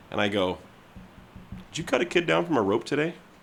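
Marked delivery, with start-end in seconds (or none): 1.7-3.1 really calm voice, pitch lightly rising. Retelling looking a frothing coworker dead in the eye: retelling own really calm question. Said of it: "just really calm".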